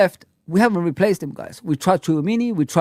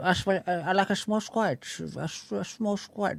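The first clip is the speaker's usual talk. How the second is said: put-on Dutch accent, softly; 12 dB quieter than usual. Mocking a manager who said he prefers a small squad: imitating his dutch accent. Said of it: "with his Dutch accent".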